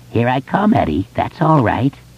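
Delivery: high, croaking monster voice. Reading a horror scene, the creature speaks to Eddie, croaking voice. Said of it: "it croaked".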